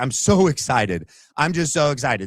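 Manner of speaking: put-on excited gushing. Mocking how she acts on day two: imitating put-on excitement. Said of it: "she's like".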